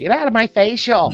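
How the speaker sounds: put-on Valley Girl accent. After saying someone sounds like an entitled Valley Girl, the speaker does a Valley Girl voice. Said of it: "The the Valley Girl".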